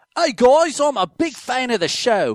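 put-on London accent, high and loud. Reading a fan's message from London aloud, in a put-on British accent. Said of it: "I need to read this in his voice".

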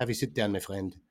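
put-on French accent. Joking about how calm Varane is, offering someone a seat, terrible French accent. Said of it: "That's a terrible French accent".

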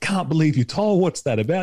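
put-on, high-pitched, half-joking tone. Retelling what the speaker said to a colleague in a meeting, retelling a half-joking jab. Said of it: "half jokingly".

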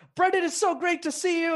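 mock super loud, very high, gushing, ear-splitting voice. Retelling how Nick greets Brendan, imitating Nick shouting. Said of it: "he's like super loud".

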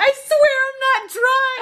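shrill, very high, drawn-out shout. Recounting being sick in the street as people walk by, retelling a yell. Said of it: "and I'm yelling".

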